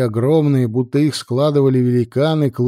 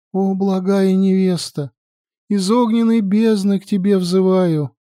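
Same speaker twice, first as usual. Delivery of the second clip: high, quavering, trembling voice; 6 semitones higher than usual. Reading a story aloud, a character begins a prayer in a trembling voice. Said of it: "дрожащим голосом начала читать молитву".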